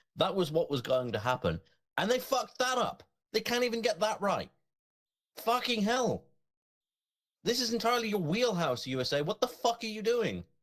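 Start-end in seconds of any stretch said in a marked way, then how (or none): 2.0-10.5 high-pitched, angry ranting delivery. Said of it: "I may be unnecessarily angry about this".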